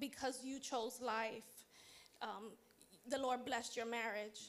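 ordinary delivery

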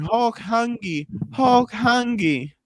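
put-on very slow, high, drawn-out howling scream. Recounting being chased by a security guard, speaker quotes himself: retelling his own screaming. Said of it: "just screaming".

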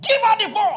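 very high, shrill, all-out roaring shout. Recounting a desperate moment, the speaker acts out their earlier demand, retelling a roaring shout. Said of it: "I was roaring".

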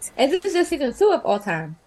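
words rattled off in a blur, way too fast. Host wrapping up with the survivors, speaking way too fast. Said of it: "I said that way too fast".

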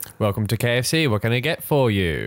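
imitated drive-through intercom voice. Retelling the drive-through greeting: imitating the drive-through intercom worker. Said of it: "That's exactly how he says it".

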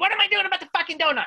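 all-out, very high, shrill screaming. Retelling a family fight in a parking lot: imitating someone screaming. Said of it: "She's screaming at me".

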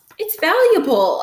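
defensive, very high-pitched voice. The narrator answers a question about the book brought on the plane, defensive. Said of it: "I said defensively".

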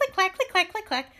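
high, clicky vocal clicking sound effect. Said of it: "Thanks for the sound".

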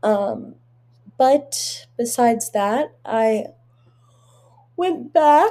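words distorted by a yawn. Talking to podcast listeners, yawning while talking. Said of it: "first yawn of the episode".

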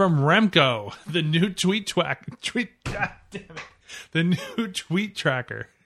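laughing, tongue-tied, headline-style read.

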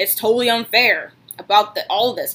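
plain

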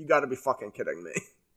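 put-on mumbling in disbelief. Recalling sitting through the worst moment, retelling a disbelieving mumble. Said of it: "I'm pretty sure I audibly mumbled like".

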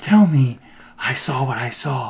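put-on mimicked childlike voice. Retelling a movie scene, imitating an actress's childlike voice. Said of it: "she does a really good Ch-, Child's voice".

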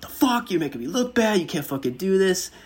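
put-on very high, loud, enraged, furious screaming. Recalling the dude who radioed about late food, retelling a man screaming. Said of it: "he's like screaming at me".

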